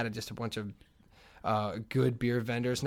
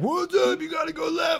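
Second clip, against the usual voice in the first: put-on drunken screaming, higher and louder; 5 dB louder than usual. Retelling drunk frat guys shouting directions: imitating drunk frat guys screaming. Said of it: "drunk frat guys just screaming".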